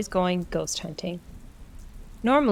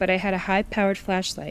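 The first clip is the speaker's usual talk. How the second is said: plain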